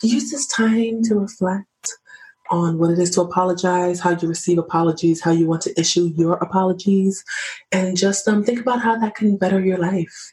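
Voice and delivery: balanced, calm, centered feminine tone. Speaker wrapping up a discussion: feminine, balanced, centered voice. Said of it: "That's my feminine, balanced, centered voice".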